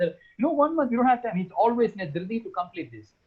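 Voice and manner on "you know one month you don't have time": very high, arrogant, hurried voice. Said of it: "The first guy who is always arrogant".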